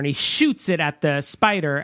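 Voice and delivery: ordinary talk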